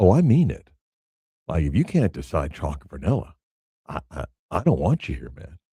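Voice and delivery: mock dead serious, low, straight-faced. Retelling how someone insists he means it: imitating a straight-faced delivery. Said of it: "he says it with, like, such a straight face".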